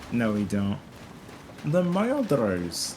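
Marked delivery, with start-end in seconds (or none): 1.6-3.0 slow, high mock Swedish accent. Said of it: "with a Swedish accent".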